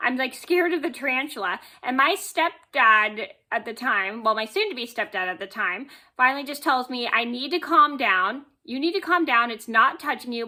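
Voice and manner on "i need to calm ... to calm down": mock-irritated, scolding put-on voice. Retelling how the stepdad scolded them for panicking over a tarantula: imitating an irritated stepdad. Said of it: "he's kind of irritated".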